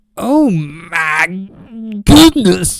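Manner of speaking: very loud, booming commentator voice, "my" stretched. Reacting to a rival team's high ranking in a Booker T voice. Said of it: "That's my Booker T impression".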